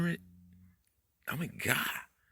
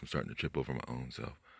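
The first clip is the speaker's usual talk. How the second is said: fast, rushed, tumbling, spat-out words. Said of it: "I'm talking too fast".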